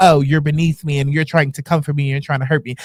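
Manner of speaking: put-on haughty, condescending, snooty bougie attitude. Acting out looking down on someone: put-on bougie attitude. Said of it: "put on my bougie, bou-, bougetto attitude and act like".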